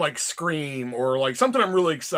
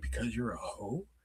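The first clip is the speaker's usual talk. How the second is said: very hushed, low, quiet whisper; 6 semitones lower, 14 dB quieter than usual. Retelling a friend's remark during a movie trailer: imitating a whisper. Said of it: "I think she whispered it to me".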